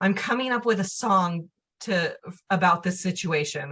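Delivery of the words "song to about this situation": normal talking voice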